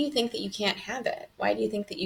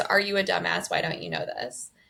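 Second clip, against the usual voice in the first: put-on short, clipped voice. Retelling answers given to an ex-husband: imitating own short curt tone. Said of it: "The tone is".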